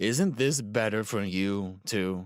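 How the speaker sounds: patronizing, condescending, talking-down tone. A character asks another a question: patronizing tone. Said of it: "Ryuji said in a patronizing tone".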